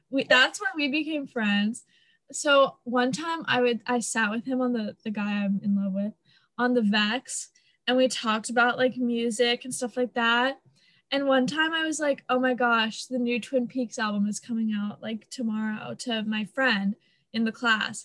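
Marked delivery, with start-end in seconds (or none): 12.3-15.9 soft whispering voice. Retelling a remark made to a friend in class: retelling a whisper. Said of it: "And I whispered it".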